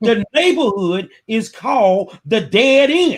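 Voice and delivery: slow, deliberate, every word carefully spelled out. Telling listeners about a Houston neighborhood, repeating its name: said slowly for clarity. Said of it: "let me say that slow for y'all".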